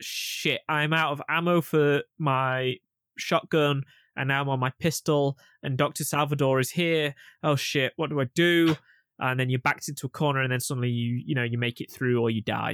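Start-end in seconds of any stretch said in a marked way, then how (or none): none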